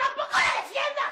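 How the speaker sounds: shouting. In a quarrel over María del Carmen, one speaker shouts back at the other. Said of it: "¡No me grites!".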